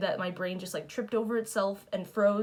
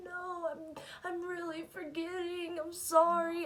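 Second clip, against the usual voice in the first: mock crying, high, tearful kid voice; 9 semitones higher, 4 dB quieter than usual. Retelling pleading with a dad as a child: imitating own past crying. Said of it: "I would have to be, like, crying".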